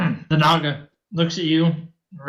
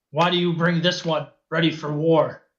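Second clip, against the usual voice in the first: loud, hissing creature voice. Narrator voicing a creature as its eyes settle on a companion; loud hissing creature voice. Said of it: "it hisses loudly".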